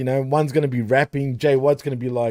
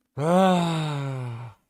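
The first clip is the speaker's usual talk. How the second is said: not enthusiastic, quieter; 4 dB quieter than usual. Reacting to the next match being announced: unenthusiastic. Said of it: "you don't sound too enthusiastic about this one".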